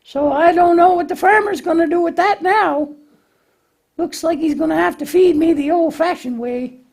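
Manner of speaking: tiny, squeaky puppet voice, very high pitched. As the puppet Lambie, trying to build something without directions, Lambie puppet voice. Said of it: "Lambie tries to put something together without following directions".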